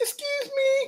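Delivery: very high, soft, squeaky, tiny woman's voice.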